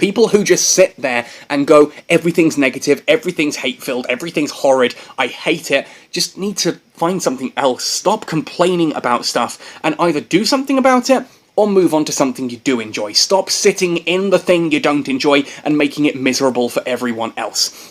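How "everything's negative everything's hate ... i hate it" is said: usual speaking voice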